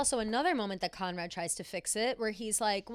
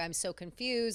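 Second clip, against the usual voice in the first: put-on tearful voice, lower; 4 semitones lower than usual. Retelling Belly venting about the wedding, imitating Belly near tears. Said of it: "basically in tears, just being like".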